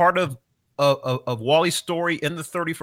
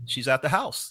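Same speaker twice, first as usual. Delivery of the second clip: mock casual, offhand, nonchalant throwaway delivery; 3 semitones lower, 4 dB quieter than usual. Recounting a story about a photo, retelling a nonchalant remark. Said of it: "Dennis just kind of nonchalantly goes".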